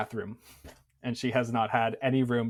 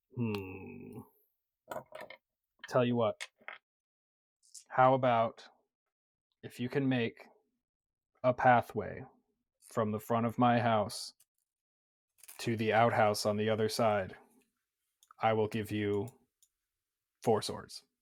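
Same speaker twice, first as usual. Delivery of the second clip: grumpy, begrudging grumbling with long drawn-out "hmm". Voicing an old woman bargaining over a trade: grumbling. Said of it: "She grumbles".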